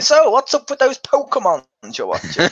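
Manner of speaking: very high, sing-song, swooping fatherly voice. Imitating a dad asking about pokemon: imitating a dad. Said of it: "your dad going".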